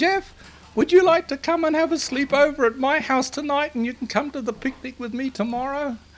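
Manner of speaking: put-on small squeaky child's voice, high-pitched. Retelling a phone call from a little friend inviting jeff over: squeaky little voice. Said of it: "here was a squeaky little voice saying".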